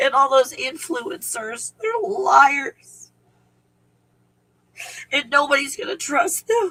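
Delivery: angry yet sad and happy. Speaker who admits feeling angry, sad and happy at once: angry, sad and happy. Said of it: "I'm like like angry, sad, and happy".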